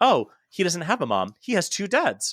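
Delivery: put-on breezy cheerfulness. Retelling their reply to a little girl's remark, performing casual and upbeat. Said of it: "performing it as casual and as upbeat".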